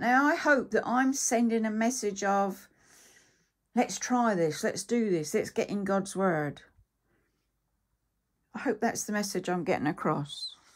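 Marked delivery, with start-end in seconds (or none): none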